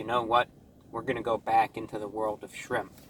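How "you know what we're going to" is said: plain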